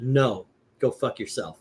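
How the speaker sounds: mock curt dismissive tone. Retelling a brush-off from a rock musician, imitating a curt dismissive reply. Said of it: "he just said it like that".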